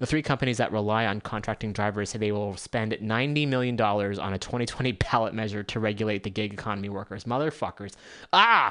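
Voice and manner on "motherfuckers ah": angry, loud, shrill, furious screaming. Reading out news about gig companies' ballot spending, screaming. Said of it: "I didn't mean to scream into the mic".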